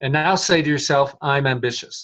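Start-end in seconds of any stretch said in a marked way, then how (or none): 1.2-2.0 dejected, deflated, low energy. Speaker tests a claim from the collapsed posture, saying it depressed and low energy. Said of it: "Go back to that depressed configuration".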